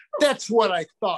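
mock, huffy, miffed, offended tone. Retelling a fan who stormed off, imitating an angry fan. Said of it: "And he stormed off".

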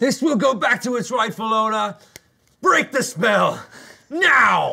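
shrill, piercing scream, very high. Holding the fire gem in a tabletop game, screaming. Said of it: "And I scream".

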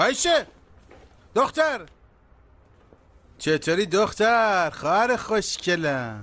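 mild half-shout, calling out. Greeting his sister at the company, a brother is shouting. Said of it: "داداش جون تو شرکتی میشه داد نزنی؟".

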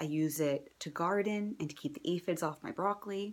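normal talking voice

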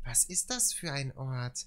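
gentle, soft bedtime-story reading voice. Mimicking a man who sounds about to read a bedtime book, soft bedtime-story voice. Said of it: "er klingt ein bisschen so, als wollte er gleich ein Buch vorlesen".

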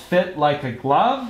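ordinary delivery

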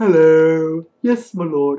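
booming, very loud, very slow, drawn-out peasant voice. Retelling how a player in a Halion raid run sounded: Warcraft 3 peasant voice. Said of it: "He sounded like the peasant of Warcraft 3".

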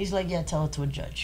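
ordinary talk

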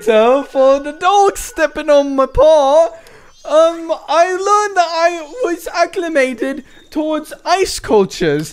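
put-on high goofy voice. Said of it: "Your British accent sucks ass".

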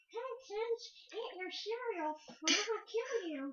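high, mock creepy horror-story kid voice.

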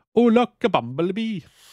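put-on high Welsh accent. Contrasting regional accents, saying an example line in a welsh accent. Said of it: "the Welsh accent is designed for saying things like".

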